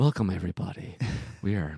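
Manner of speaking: relaxed deep radio-host delivery. A podcast co-host showing how they'd open an episode, NPR radio voice. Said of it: "I do the NPR version".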